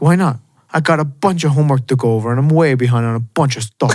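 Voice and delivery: imitated New York accent. Retelling a movie scene where the kid asks to eat in his room: imitating a New York accent. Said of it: "he goes into the New York accent".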